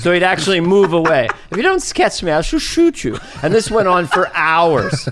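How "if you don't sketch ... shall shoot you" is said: very high, snooty, haughty aristocrat voice. Recalling a sketch, the speaker acts out the aristocrat's demands to the artisan, imitating a snooty aristocrat's voice. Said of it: "hatching the voice of the aristocrat".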